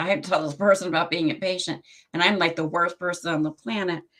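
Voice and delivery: ordinary delivery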